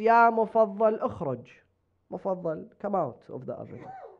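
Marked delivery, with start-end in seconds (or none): none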